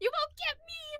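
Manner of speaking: put-on high cackling old hag voice. Voicing an old lady fleeing the group: cackling old lady. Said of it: "kind of cackles for a moment".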